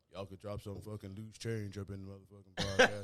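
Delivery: very low put-on deep voice, dropped pitch. Quoting the podcast's recorded drop that asks listeners for money: imitating a deep voice drop. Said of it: "that deep voice that kicks in".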